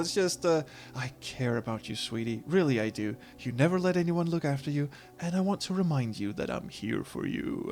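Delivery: seductive voice. Speaking in character to another character called sweetie: sultry voice. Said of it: "I don't know why I put on that voice, but I don't do sultry very well".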